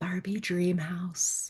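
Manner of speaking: whispered softly. Retelling the words whispered to oneself at bedtime: retelling a whisper. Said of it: "I go to bed whispering this to myself".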